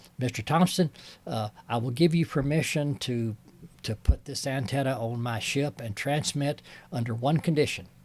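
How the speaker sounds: normal talking voice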